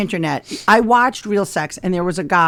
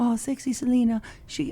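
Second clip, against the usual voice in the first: put-on Latin accent, slow, high and drawn-out; 6 semitones higher, 9 dB quieter than usual. Retelling a phone call about a canceled booking: imitating a latin accent. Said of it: "that's my Latin accent".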